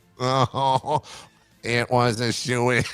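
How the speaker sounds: weird, otherworldly, made-up alien voice. Repeating a joke for fun, alien voice. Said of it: "It's always better in alien voice".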